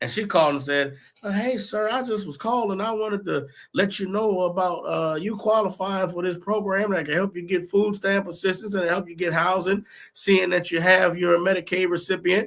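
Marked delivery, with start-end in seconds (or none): 1.3-12.5 put-on Southern accent, chatty patter.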